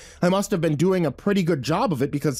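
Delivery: plain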